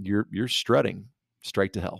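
normal talking voice

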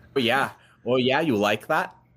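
put-on Minnesota accent. After another speaker says a Minnesotan accent turns them on, in a Minnesotan accent. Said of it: "A Minnesotan accent".

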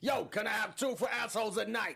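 put-on Boston accent. Joking about a film title, asking for two tickets in a Boston accent. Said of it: "Maybe a little Boston to it".

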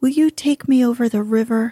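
ordinary delivery, nothing marked

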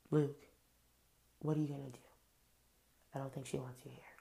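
mournful, heavy-hearted, melancholy, somber voice. Retelling a show moment, imitating Chris Harrison speaking to Luke: mock-melancholy Chris Harrison voice. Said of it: "melancholy voice and is like".

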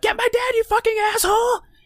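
play-acted frantic, shrill, very high-pitched shriek. Retelling a scene where a woman screams at the lieutenant, imitating someone screaming. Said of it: "she's screaming to the lieutenant".

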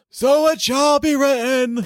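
very high, loud, otherworldly seer voice. On a podcast, repeating a phrase as a co-host asked, in Trelawney voice. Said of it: "You have to say that in your Trelawney voice".

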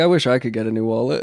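usual speaking voice

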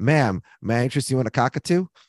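put-on heavy, thick Brooklyn street accent. Retelling a scene, the brother speaks to a lady walking by in a strong Brooklyn accent. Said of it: "with his very strong Brooklyn accent".

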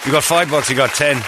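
put-on Irish-accented speech. Retelling what a former boxing trainer would say: imitating an Irish accent. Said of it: "He turns Irish".

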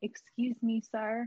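soft whisper. Acting out a line to say to someone before leaving a flight: whispering. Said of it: "He said he gets whispered that".

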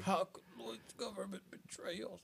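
croaking, rough, creaky dying voice. Saying a line as the character dies: sounding like he's dying. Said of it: "He sounded like he was dying".

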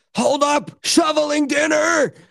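play-acted very high, stretched, drawn-out holler. Reading out her all-caps message, imitating someone yelling. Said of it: "So she's yelling at you".

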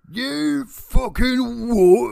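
very high-pitched, loud Cockney outburst. Recalling startling coworkers at work, repeating it in higher-pitched Cockney. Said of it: "At a higher pitch".

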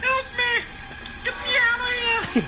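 pretend panicked crying out. Pretending a corpse has come back to life, crying for help: pretending panic. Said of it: "I just wanna scream out loud".

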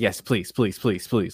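put-on pleading. Retelling a woman's reply in a longer interview clip, mock-begging. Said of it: "like begging".

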